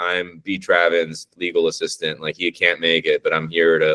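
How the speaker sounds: ordinary delivery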